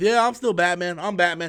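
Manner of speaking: mocking put-on voice. Retelling how Ben Affleck kept insisting: imitating Ben Affleck. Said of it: "Ben Affleck sat there and lied".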